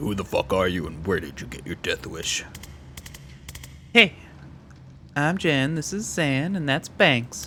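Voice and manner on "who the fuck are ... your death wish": very low, super deep put-on bass voice. Going with a super deep voice for a line, super deep voice. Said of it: "I'm just gonna go with the super deep voice".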